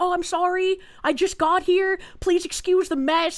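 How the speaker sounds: high, sheepish, shamefaced apologetic tone. Retelling apologizing to a contractor for the messy place: imitating own apologetic tone. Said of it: "I'm apologetic. I feel bad".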